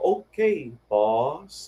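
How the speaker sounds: old cartoon character voice, swooping pitch, "boss" drawn out. Recalling a line from an old cartoon: imitating Bozo. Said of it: "I imitate him".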